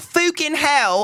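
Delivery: fucking said as fooking. Mocking anybody who says 'fook' out loud: mock accent saying 'fook'. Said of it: "If I hear a fucking anybody go".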